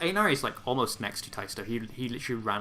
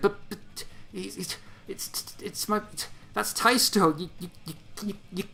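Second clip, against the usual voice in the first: stammering character voice, pitched higher; 8 semitones higher than usual. Narrating a scene and voicing a dumbstruck character, stammering Inaris. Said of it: "he like stammers and stutters".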